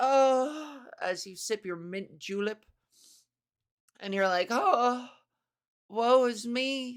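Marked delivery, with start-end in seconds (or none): 4.5-7.0 mournful, forlorn, very slow, drawn-out lament. Acting out a lonely woman on a veranda: forlorn. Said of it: "you look out on the veranda forlornly".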